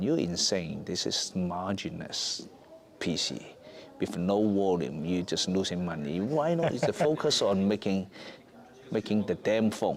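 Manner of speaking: normal talking voice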